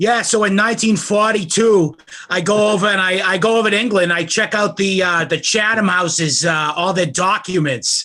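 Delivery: put-on Boston-accented speech. Retelling an interview recording, imitating Carroll Quigley's Boston accent. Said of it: "he's got a Paul Fenn's Boston accent".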